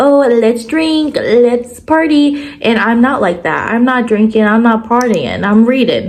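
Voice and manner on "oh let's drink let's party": slow, higher, drawn-out mocking party-girl voice. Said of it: "on TikTok and on Instagram being like".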